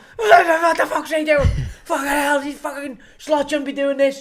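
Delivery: put-on angry shouting. Retelling what fans did all season: imitating fans shouting at the telly. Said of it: "is just shout at the telly".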